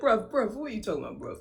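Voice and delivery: put-on British accent. Retelling how the actor said it: mock british accent. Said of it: "He was like".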